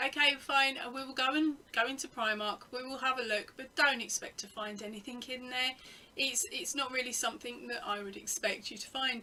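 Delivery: ordinary delivery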